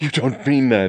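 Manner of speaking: gasped out. James answers the Colonel's news that the engagement is ending: gasping. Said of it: "he gasped".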